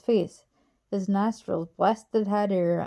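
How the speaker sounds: plain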